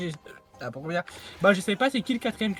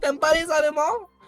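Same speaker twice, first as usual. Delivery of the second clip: fake German accent, higher and louder; 5 semitones higher, 5 dB louder than usual. Accusing the other player of disliking Germans: put-on German accent. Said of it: "je suis allemand".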